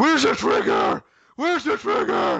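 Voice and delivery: loud brooding superhero voice. Speaker talks about a story that's only okay, Batman voice. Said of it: "I thought that was quite a good Batman voice".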